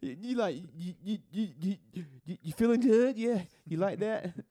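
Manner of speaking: high, loud, stammering, tongue-tied stutter. Retelling own awkward attempt at dirty talk: imitating own stuttering dirty talk. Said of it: "You over stuttering".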